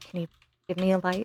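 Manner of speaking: hurried murmur, very quiet and quick. Playing a mercenary kneeling by Vecna in a role-play game: quietly asking. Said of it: "she'll kind of quietly say".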